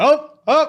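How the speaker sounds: high, loud, evil menacing gasp. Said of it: "Barney's like".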